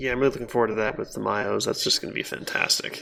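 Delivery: dry, sarcastic tone.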